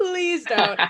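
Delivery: acted-out desperate, high-pitched pleading, begging tone. Retelling begging a chainsaw actor not to do it: imitating herself begging. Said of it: "Literally begging with her".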